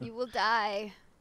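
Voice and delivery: put-on acted old sage voice. Suggesting a game character warns new players on a bridge: Papa Vanu impression. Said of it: "That's my Papa Vanu impression".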